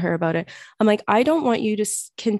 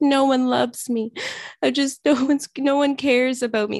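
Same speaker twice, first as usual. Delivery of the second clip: mock crying, much higher pitch; 5 semitones higher than usual. Retelling how she cried and said mean things to herself, imitating someone crying. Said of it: "Like crying and saying all this stuff".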